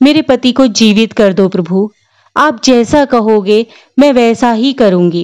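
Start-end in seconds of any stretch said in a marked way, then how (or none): none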